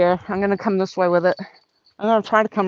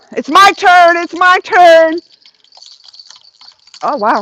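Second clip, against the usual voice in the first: very high, very loud, shrill ecstatic shriek; 9 semitones higher, 10 dB louder than usual. Just hooked a fish and claiming your turn: excited screaming. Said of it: "I probably really screamed in your guys' ear".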